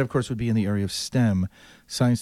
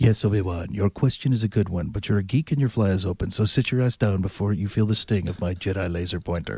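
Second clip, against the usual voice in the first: menacing, sinister, full dark villain voice. Acting out how they answer the guy who asked a question, Darth Vader voice. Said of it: "they'll go Darth Vader on your ass. They'll do the voice".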